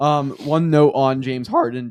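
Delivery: voice cracking. Podcast co-host asked for thoughts on a trade, voice cracking. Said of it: "just voice crack. I keep voice cracking".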